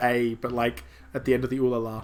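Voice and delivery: ordinary talk, nothing marked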